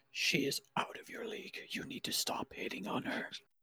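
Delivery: hushed whisper. Whispering in character to Kairos: whispering. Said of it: "I'm gonna whisper to you".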